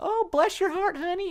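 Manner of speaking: very high, syrupy sweet Southern belle voice. Describing Southern Belle type girls: imitating a sweet Southern belle. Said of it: "it's supposed to sound nice".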